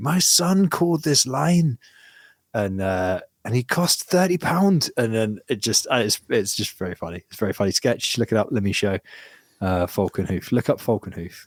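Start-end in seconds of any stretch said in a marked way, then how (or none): 0.0-4.9 put-on furious, irate Glaswegian accent, higher pitched. Describing a comedy sketch set in Scotland, imitating irate Glaswegian mother. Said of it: "an irate Glaswegian mother being like".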